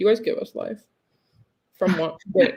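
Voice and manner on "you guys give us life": deadpan flat monotone with no pitch lift. Thanking the audience for likes, said in a flat monotone. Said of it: "The monotone you just used to say that".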